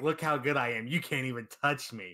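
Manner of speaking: put-on arrogant fighter voice. Describing a character's attitude in a game: imitating arrogant Vegito. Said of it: "Vegito, he's like".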